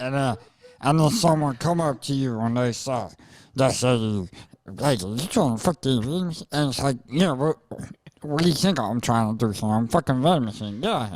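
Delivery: put-on fuzzy puppet voice. Performing a classic bit after being asked: Groundy Moxley voice. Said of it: "Do the voice".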